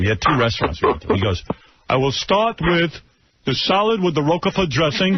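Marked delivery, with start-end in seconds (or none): 1.9-5.2 put-on higher, vaguely European, foreign-sounding accent. Retelling how a father ordered at a restaurant: imitating father, foreign-sounding accent. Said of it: "He sounds like he's from another country".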